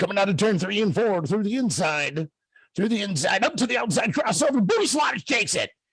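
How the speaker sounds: mock frenzied announcer voice, high and hyped. Retelling the race finish from the microphone: retelling own frenzied race call. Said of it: "I had that crowd whipped into such a frenzy".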